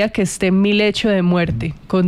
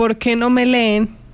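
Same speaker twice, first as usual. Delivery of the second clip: normal talking voice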